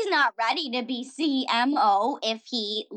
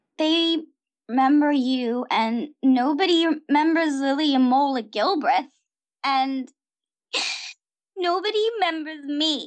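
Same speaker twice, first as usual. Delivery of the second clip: tearful voice on the verge of crying; 2 semitones higher than usual. A character being comforted by another, speaking on the verge of tears. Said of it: "don't cry".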